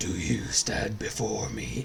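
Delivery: deep, gravelly, low, hushed, menacing dragon villain voice. Showing the sick-day voice messages siblings send each other, in a mock dragon villain voice. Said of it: "doing like Smog or Darth Vader".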